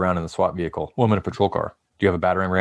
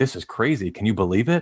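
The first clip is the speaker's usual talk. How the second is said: heavy, pointed, laid-on sarcastic tone; 3 semitones higher than usual. Retelling mocking a locked-out person who claimed never being locked out: retelling own heavy sarcasm. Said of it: "the heavy weight of sarcasm".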